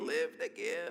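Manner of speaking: crackly, high-pitched preacher voice. Quoting a preacher's motto the way he used to say it, crackly Wayne Myers voice. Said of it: "it's kind of a crackly voice".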